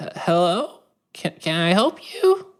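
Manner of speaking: put-on very high-pitched, swooping old-timer voice. Narrator voicing an old man and woman opening the door, elderly person voice. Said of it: "an old man and woman at the door".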